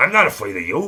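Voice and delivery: put-on very loud, crotchety, high-pitched old-timer tough-guy bellow. Doing an impression of a crotchety old man: James Caan impression. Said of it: "That's how he talks".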